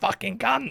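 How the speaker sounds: imitated angry shouting. Imitating what elderly neighbours hear through the window: imitating own angry shout. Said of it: "eighty-year-olds just hearing me shout".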